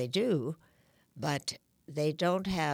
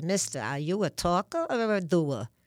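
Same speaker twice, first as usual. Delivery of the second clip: put-on New York Brooklyn accent; 3 semitones higher, 5 dB louder than usual. Quoting a woman's funny line from an old movie, in a brooklyn accent. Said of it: "she had this Brooklyn accent".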